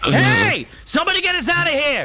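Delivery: loud high shouting. Voicing a prisoner who kicks the cell, calling for release: shouting in character. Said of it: "hearing the shouts".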